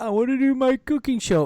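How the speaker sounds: very high-pitched, tearful crying voice. Act out a man you find stupid coming out with his wish, in a mock crying voice. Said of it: "in a crying voice".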